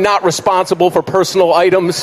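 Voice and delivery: normal talking voice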